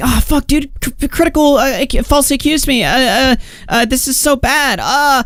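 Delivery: high, panicky, mock freaking out.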